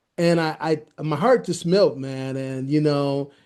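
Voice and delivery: ordinary talk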